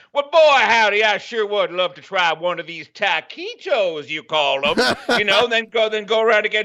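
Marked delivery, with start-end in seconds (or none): 0.1-4.9 put-on down-home Southern accent. Going around the samples again, trying a taquito: put-on Southern accent. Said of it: "Use a southern accent next time".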